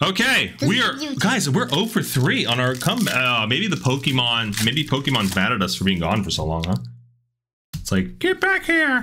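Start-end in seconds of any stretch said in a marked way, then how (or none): 7.8-9.0 very high, cartoon little creature cry. Imagining the Pokemon mad at them for being gone so long, Pokemon impression. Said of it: "That's my impression of Pokemon".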